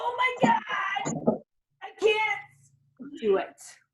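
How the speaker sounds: high, slow, whiny nervous panic. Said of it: "I know you guys are like".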